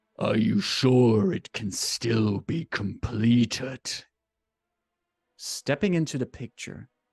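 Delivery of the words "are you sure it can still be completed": deep, slow voice, almost a growl. A narrator voices a figure speaking from behind a monologuing man, in a deep, almost growling voice. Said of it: "a deep, almost growling voice".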